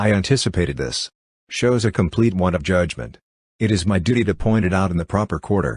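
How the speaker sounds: plain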